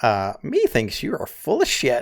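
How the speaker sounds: sing-song character voice with pitch swooping widely. Voicing Mohara, who raises one eye at a player: Mohara character voice. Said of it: "Mohara kinda gives you one of those looks ... and he says".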